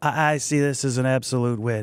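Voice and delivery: low, breathy throat voice with a bubble. Showing how adding air changes the voice: Mark Ruffalo voice. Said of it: "and it's Mark Ruffalo".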